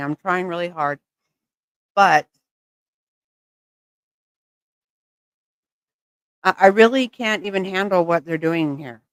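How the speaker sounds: altered speech from dental work. Chatting just after dental work done today: talking funny after dental work. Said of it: "so I'm talking a little funny".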